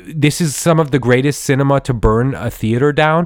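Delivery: normal talking voice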